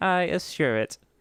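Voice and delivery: mechanical, machine-like tone. Voicing the other man in a story being told: robotic tone. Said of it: "Consoled the other man with a robotic tone".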